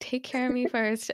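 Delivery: ordinary talk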